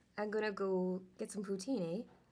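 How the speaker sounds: Canadian-accented speech. Talking about Canadian accents, one speaker tries a line in a Canadian accent. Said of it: "to do a Canadian accent?".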